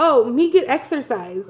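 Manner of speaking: put-on slow, dumbed-down, talking-down delivery in baby words. Retelling how she talks to him like he's an idiot: imitating talking down to someone. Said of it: "talking to him like he's an idiot".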